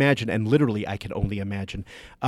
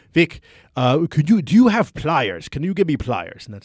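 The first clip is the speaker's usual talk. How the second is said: loud put-on Dutch-accented English; 4 semitones higher, 5 dB louder than usual. Quoting a Dutch construction supervisor up on a ladder, imitating his Dutch accent. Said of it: "And that's his accent".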